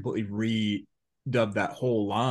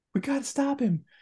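very high, cracking voice like puberty. Recounting a part where Spike's voice cracked mid-line: imitating Spike's puberty-cracking voice. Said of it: "Spike's voice got like he was going through puberty".

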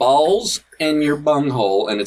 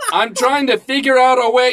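mock yelling, higher and louder; 10 semitones higher, 4 dB louder than usual. Reading aloud a post written in all caps: put-on shouting. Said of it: "I'm shouting this because it's in all caps".

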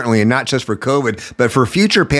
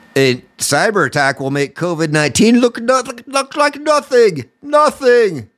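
horrible fake German accent, much higher; 10 semitones higher than usual. Quoting someone else's words, speaker puts on a bad German accent. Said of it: "my German accent's horrible".

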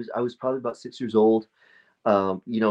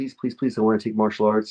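acted childlike begging, mock-pleading. Retelling how they begged their mom as a kid, retelling childhood begging. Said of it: "I begged my mom".

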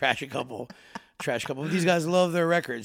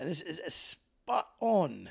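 put-on English accent, quieter; 3 semitones higher, 5 dB quieter than usual. Introducing a film to another speaker: Michael Caine voice. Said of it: "that was my Michael Caine".

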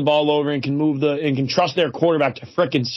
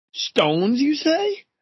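very high, startled, surprised voice; 11 semitones higher than usual. After giving his game prediction, a speaker turns to another for a pick: attempted surprised voice. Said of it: "I tried to do like a surprised voice".

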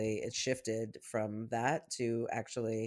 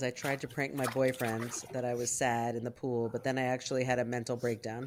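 normal talking voice

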